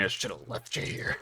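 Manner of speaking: fast, breathy whispered grumble through pained groans. Narrator voicing an injured character's line to another character, muttering while groaning in pain. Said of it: "J P mutters as he's groaning pain".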